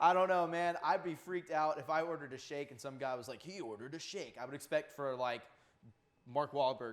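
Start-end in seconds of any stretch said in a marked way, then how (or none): 3.4-4.4 epic movie trailer narrator voice. Imagining a drive-thru worker's reply: imitating a movie trailer voice.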